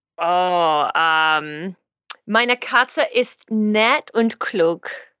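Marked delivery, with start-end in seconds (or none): 2.3-4.9 slow, carefully placed German with French accent. Answering a request to talk about pets in German: German with a French accent. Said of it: "You were speaking German with a French accent".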